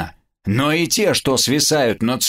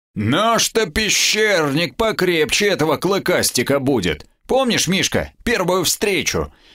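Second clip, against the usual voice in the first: condescending, patronizing tone with indulgent superiority; 4 semitones higher than usual. After the beast falls, a man speaks to a companion, condescending. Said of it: "снисходительно сказал Костя".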